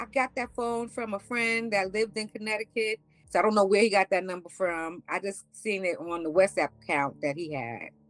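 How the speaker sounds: ordinary delivery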